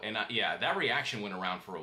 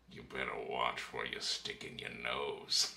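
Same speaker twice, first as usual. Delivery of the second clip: breathy, hushed, whispered funny voice; 9 semitones lower, 5 dB quieter than usual. Chatting with a buddy, speaker quotes a line from an episode in Cad Bane voice. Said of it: "Cad Bane has such a funny voice".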